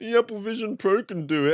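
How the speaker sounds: put-on high-pitched, childish whine, like a little kid. Mocking the speaker's own habit of comparing headsets, mock childish voice. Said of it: "I sound like a bloody child".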